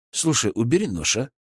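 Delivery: ordinary delivery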